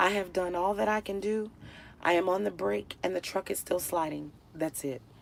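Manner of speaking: put-on, very hushed, dead-calm voice. Retelling a driver's words as the truck slides on ice: imitating an extremely calm driver. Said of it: "he remains extremely calm".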